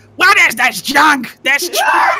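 very high, loud, shrill, booming, displeased monster yell, swooping. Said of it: "Nagush is displeased".

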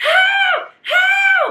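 high, loud screaming.

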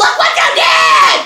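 mock shout, very low, deep and restrained. Retelling what she shouted after the other driver hit them, re-enacting her yell. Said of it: "And I yelled".

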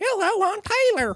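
squeaky, very high, mock Southern accent.

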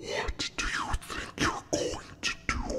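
sinister, menacing, hushed whisper. Narrator reading a character's challenge to the narrator, in a sinister voice. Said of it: "he said in a sinister voice".

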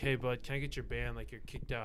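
ordinary delivery

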